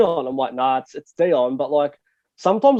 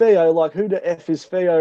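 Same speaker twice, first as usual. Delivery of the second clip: put-on strong English accent. Retelling how a guy on a reality show went off: imitating a strong English accent. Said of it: "in a real Pommy accent".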